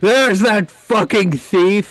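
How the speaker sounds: play-acted high, loud yell at top of lungs. Recounting walking into a bar to meet someone who yelled: retelling a yell at full lungs. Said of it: "he yelled at the top of his lungs".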